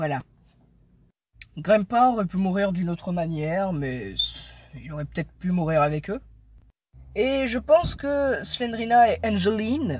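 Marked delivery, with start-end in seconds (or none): 8.4-10.0 names pronounced in English-style accent. In French speech, saying the character names with an English accent. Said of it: "oui je prends l'accent anglais".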